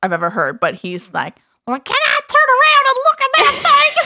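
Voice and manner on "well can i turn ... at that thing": put-on very high, loud, funny little kid voice. Imitating a son during a facial in his funny little voice. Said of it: "he has the funniest little voice".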